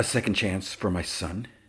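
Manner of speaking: ordinary delivery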